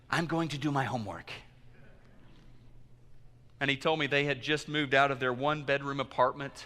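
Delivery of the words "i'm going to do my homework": put-on eager, excited delivery in a Chinese accent. Retelling what a young man from a chinese couple said after church, in a chinese accent. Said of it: "in his beautiful Chinese accent said".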